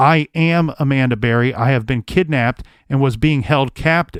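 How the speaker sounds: plain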